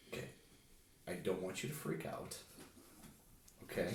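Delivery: quiet, hushed whisper. Speaking to Quillith apart from the others in character: speaking quietly. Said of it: "And quietly, without the others".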